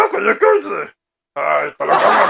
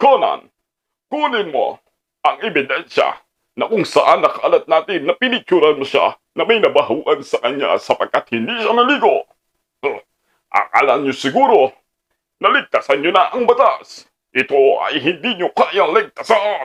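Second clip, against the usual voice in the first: animated, low-pitched cartoon detective voice; 5 semitones lower than usual. Performing a cartoon character who names a suspect and tells Conan to collect evidence, in a cartoon character voice. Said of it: "Ikaw ay tinuturing na suspect".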